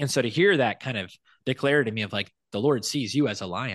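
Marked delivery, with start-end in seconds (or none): none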